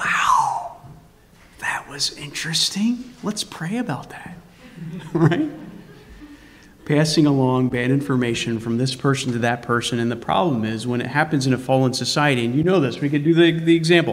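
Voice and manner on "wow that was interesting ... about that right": mock gossipy whisper, quieter. Acting out a gossiper drawing someone close in secret: imitating a secret gossiping whisper. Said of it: "the idea of in secret".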